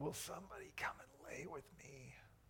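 mock, feeble, sickly little whisper. Recounting someone sick on the couch calling out, imitating a weak, sick little voice. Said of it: "in her little weak, sick voice cry out".

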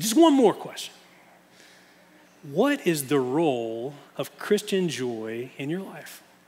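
put-on heavy New York accent with swooping sing-song tune. Speaker recalls a man questioning a candidate, in a thick New York accent. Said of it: "he had this thick New York accent".

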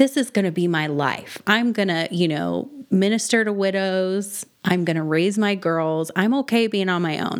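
ordinary talk, nothing marked

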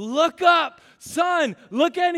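high, loud, drawn-out yelling. Retelling yelling at their son during a bike ride: retelling a yell. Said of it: "I start yelling at him".

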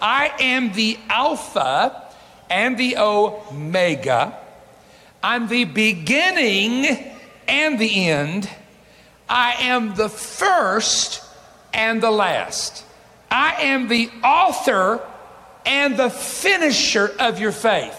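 very slow, deliberate reading, word by word. Speaker reading a verse of scripture aloud: very slowly. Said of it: "I'm going to read it very slow".

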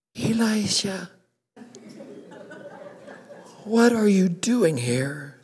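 still, small, very soft, hushed voice. Retelling Elijah in the cave, voicing the little voice speaking to him, still, small, soft voice. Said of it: "it was a little voice saying it real soft".

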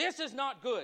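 put-on heavy accent, broken English. Retelling what a man said on seeing the speaker, thick accent, broken english. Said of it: "in a very thick accent and broken English".

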